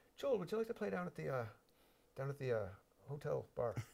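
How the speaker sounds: rough, put-on Irish accent. Speaker recounts being asked years ago to play at a hotel bar, imitating a man's accent. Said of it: "I'm not doing his accent justice".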